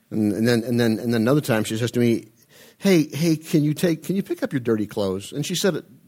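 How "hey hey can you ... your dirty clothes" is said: gentle, sweet, very nice tone. Retelling how she once asked a favour, imitating asking very nicely. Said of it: "very nicely".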